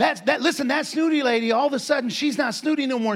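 ordinary talk, nothing marked

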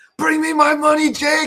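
acted, shrill screaming pitched very high. Retelling a moment from a fight video, imitating someone screaming. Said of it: "he just starts screaming".

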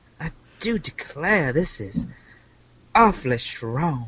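put-on genteel southern belle voice. Picturing a Czech brewmaster sipping Pilsner, voicing him as a mock southern genteel lady. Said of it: "everything becomes southern genteel lady".

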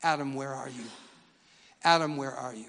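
grieving, aching, broken-hearted calling out. Retelling God calling for Adam after he sinned: acting heartbroken. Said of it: "It was a broken heart".

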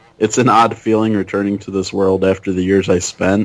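plain

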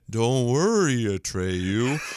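attempted put-on creature voice. Speaker tries doing Falcor talking to Atreyu: Falcor voice. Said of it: "I'll try my Falcor, so it's like".

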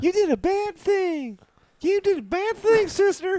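put-on innocent voice. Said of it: "Let's hear [name]'s".

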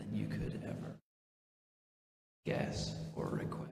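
soft, unvoiced whisper.

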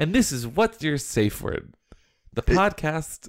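podcast-style announcer voice. A podcast host introduces the show to listeners in an announcer voice. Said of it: "that was my announcer voice".

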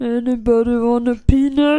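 called out slowly and loudly. Doing the line others asked for: Andre the Giant impression. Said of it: "It's Andre the Giant".

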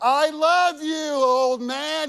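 very slow, loud, high, drawn-out yell. Recounting a Father's Day phone call to their dad, retelling screaming into the phone. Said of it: "I'm screaming it into the phone".

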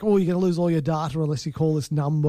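ordinary talk, nothing marked

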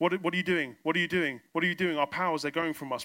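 mock alarmed, panicked, repeated outcry. Telling of prayers when the witch doctor's wife cries out, in a mock-panicked voice. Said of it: "you hear a panicked voice".

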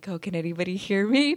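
hushed words through suppressed laughter, quiet. Retelling a funny movie in the theater: imitating own quiet laughing. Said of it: "laughing really quietly".

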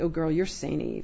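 normal talking voice

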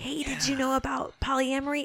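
gentle whisper. Acting out a butterfly that whispers into a flower: butterfly whispering to a flower. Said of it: "it whispers into the flower".

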